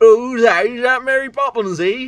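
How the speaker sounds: over-the-top fake English accent. Quoting what people say to the speaker, in an over-the-top English accent. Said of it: "that sounds like the most racist English accent ever".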